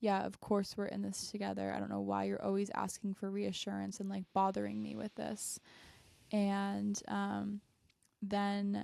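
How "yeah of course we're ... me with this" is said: ordinary talk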